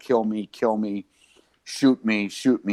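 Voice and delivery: mock repeated begging cry, contained at talking volume. Retelling a man screaming at police officers: imitating someone screaming. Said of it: "He's screaming at the police officers".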